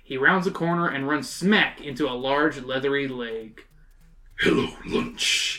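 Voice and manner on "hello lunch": deep croaking voice. Reading a story aloud, the monster greets Mario: deep croaking voice. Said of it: "croaks a deep voice".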